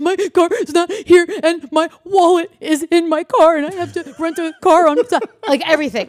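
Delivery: very high, very loud frantic crying out. Retelling calling the person who handles his finances after finding his car gone: retelling frantic bawling. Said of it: "that's where I started bawling".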